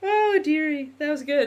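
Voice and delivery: high, teary voice, laughing and crying. After an emotional moment, crying while laughing. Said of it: "now I'm crying again because I'm laughing".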